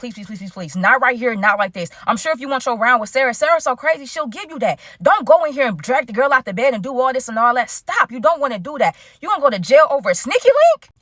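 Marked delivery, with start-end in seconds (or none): none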